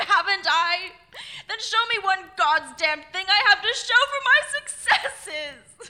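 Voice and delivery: very loud, high, exasperated, frustrated shout. Replying to Gwen, whom the speaker then apologizes to: shouting. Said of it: "I didn't mean to shout at you".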